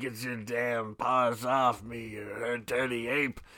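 deep, low, very slow drawn-out movie-style delivery. Retelling a movie scene on a TV channel: Charlton Heston impression. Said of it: "Charlton Heston being like".

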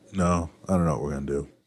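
soft, downcast, sorrowful voice. Asked about making a king cake for Mardi Gras season, answering in a sad voice. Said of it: "You sound so sad".

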